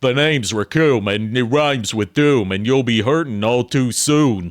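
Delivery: put-on tough-guy film-star voice. Quoting a dub's line for a character described as Stallone-like: imitating Raccoon's Stallone-like dub voice. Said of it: "It was almost a Sylvester Stallone".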